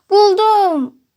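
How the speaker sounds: gleeful, delighted, joyful cry, high-pitched and loud. Narrator reads the baby owl answering its mother, joyful. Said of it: "dedi yavru baykuş sevinçle".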